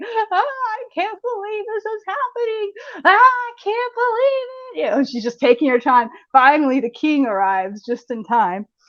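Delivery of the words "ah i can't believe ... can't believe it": very high, drawn-out, tearful wailing cry. Retelling a fairy tale, quoting Talia undressing before the fire: imitating someone screaming and crying. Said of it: "she's just screaming and crying".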